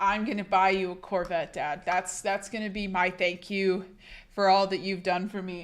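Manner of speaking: plain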